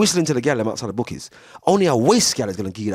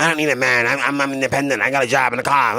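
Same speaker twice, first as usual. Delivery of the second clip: mocking put-on cartoon voice. Addressing listeners, the speaker mocks their claim in a Shrek character voice. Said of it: "You sound like that character out of um".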